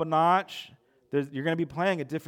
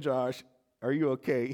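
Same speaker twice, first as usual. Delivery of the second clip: put-on, trying not to laugh, laughter through words; 2 semitones lower than usual. Retelling a coach standing over a hit player, imitating laughing while talking. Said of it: "he's laughing the whole time".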